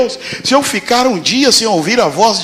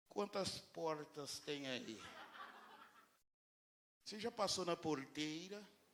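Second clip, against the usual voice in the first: very quiet, low, hushed São Paulo accent; 6 semitones lower, 35 dB quieter than usual. Imagining God's voice as a guy from central São Paulo, in São Paulo accent. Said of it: "do centro mesmo de São Paulo?".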